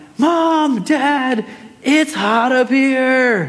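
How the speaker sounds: mild, high, slow mock yell. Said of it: "yell down".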